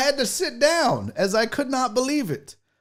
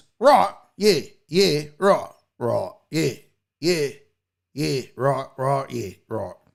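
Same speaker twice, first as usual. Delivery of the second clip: very low, deep put-on voice, dropped right down; 11 semitones lower than usual. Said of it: "That's my Tom Hardy in Peaky Blinders".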